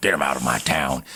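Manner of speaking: very low, hushed, quiet growling voice. Show how Paul Newman sounds voicing Doc Hudson in the movie, in a Paul Newman growl. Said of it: "there's that kind of growl".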